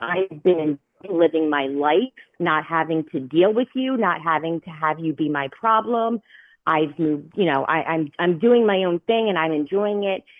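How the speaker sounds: normal talking voice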